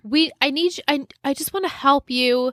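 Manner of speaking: high, eager, desperate pleading tone. Retelling a character begging to help: imitating a desperate plea.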